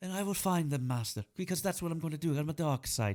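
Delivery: put-on Irish accent, weak, delivered with no menace. Describing an Irish actor who didn't want the villain role, imitating an Irish actor. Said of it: "he was an Irish lad".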